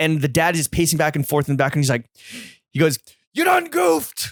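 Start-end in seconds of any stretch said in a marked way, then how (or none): 3.3-4.3 put-on scream, higher. Retelling what a father screamed at the camera: imitating someone screaming. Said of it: "he literally screams out to the camera".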